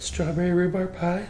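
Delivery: soft, scared voice. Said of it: "Like, scared".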